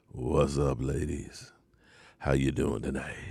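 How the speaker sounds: very low, deep, hushed put-on voice. Greeting the ladies in the chat, in a deep voice. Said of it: "that's my deep voice".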